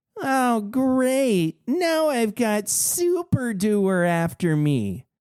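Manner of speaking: very slow, whiny voice. Narrator reads a gamebook; the robot dinosaur speaks: whiny Wally voice. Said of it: "the robot dinosaur says in a whiny voice".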